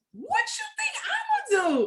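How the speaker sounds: high shouting with laughter.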